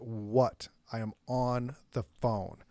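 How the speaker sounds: put-on speech through gritted teeth. Retelling answering the wife while on the phone: speaking through gritted teeth. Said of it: "I'm gritting my teeth and I'm like".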